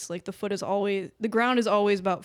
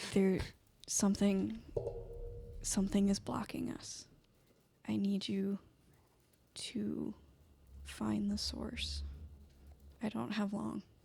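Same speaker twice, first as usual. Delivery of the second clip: very quiet, hushed, barely audible whisper; 9 dB quieter than usual. In a tabletop game, a faint voice answers a player, in a very quiet whisper. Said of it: "really, really quiet whisper".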